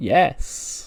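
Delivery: mock hesitant, jittery, nervous delivery. Retelling a wrestling segment, imitating a nervous yes. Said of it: "sort of nervously looks around and goes".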